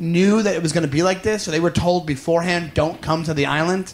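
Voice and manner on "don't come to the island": plain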